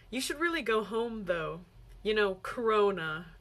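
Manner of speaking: ordinary talk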